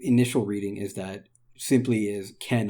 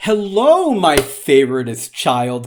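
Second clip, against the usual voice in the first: put-on very slow, loud, drawn-out doting motherly tone; 4 semitones higher, 8 dB louder than usual. Describing how a character speaks to Chris in Japanese: Carol's favorite-child tone. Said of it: "that kind of tone".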